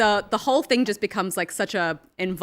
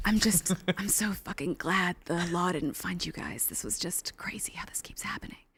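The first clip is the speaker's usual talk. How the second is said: very quiet, soft, seductive audiobook narrator voice; 3 semitones lower, 10 dB quieter than usual. Retelling what a woman in a story said, in her sexy audiobook voice. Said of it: "she had like um kind of like a like a sexy audiobook voice".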